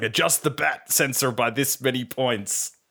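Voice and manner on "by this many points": normal talking voice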